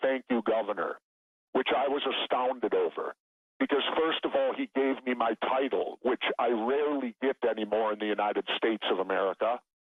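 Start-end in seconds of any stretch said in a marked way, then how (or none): 0.0-1.0 spoken quietly. Retelling what a president said quietly on leaving: imitating someone speaking quietly. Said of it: "he just said very quietly".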